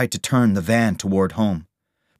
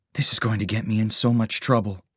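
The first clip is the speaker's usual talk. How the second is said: ordinary delivery, nothing marked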